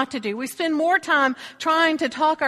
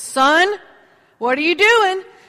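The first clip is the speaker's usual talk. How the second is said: acted, booming, loud, pitched-up calling voice; 5 semitones higher, 6 dB louder than usual. Retelling a voice coming up behind a man at a donut display: booming voice. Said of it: "this booming voice comes up behind him and says".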